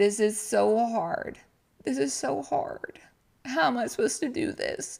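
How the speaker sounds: high, tearful voice sobbing through the words. Retelling bawling over a disgusting meal, and actually crying again now: crying. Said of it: "I'm actually crying now".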